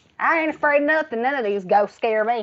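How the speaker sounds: put-on heavy Texas country accent. Retelling how a teaser imitated her speech: mock country accent. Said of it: "He said that I sounded like".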